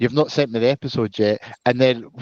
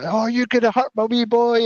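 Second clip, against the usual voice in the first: put-on, high-pitched, frantic screaming, going mental; 11 semitones higher than usual. Retelling a mum going mental after a minor car crash, imitating mum screaming. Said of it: "running round and screaming at them, going mental".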